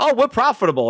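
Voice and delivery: airy, cocksure tone. Imitating how a man said it with confidence, mock-confident. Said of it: "look at how he says profitable".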